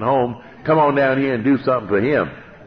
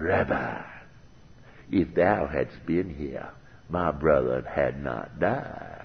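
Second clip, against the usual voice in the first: mock, heavily sarcastic, slow dripping tone; 9 semitones lower, 10 dB quieter than usual. Retelling Martha confronting Jesus on the road: imitating Martha's sarcastic tone. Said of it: "you have to hear the sarcasm in her voice".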